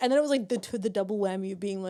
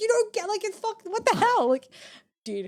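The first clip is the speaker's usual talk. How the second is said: put-on tearful rant, very high and swooping; 12 semitones higher, 4 dB louder than usual. Speaker retells answering her roommate while upset, retelling being in tears. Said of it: "I was like in tears".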